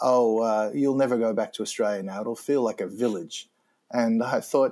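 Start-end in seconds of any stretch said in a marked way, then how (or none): none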